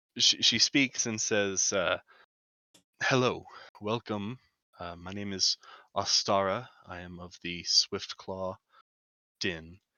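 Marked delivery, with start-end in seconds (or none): 3.0-9.8 put-on aged, regal, confident elderly voice. Voicing a regal leader greeting the travellers: aged regal confident voice. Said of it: "in her voice, you can hear a bit of age peeking through, but a, like, regality".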